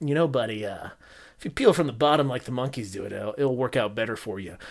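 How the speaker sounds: put-on smug, soft know-it-all tone. Host acting out his past self advising a buddy, acting smug. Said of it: "very smugly is like".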